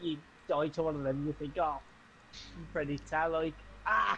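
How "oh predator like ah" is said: plain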